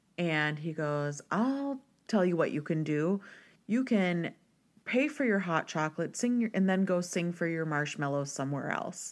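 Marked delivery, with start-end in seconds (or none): none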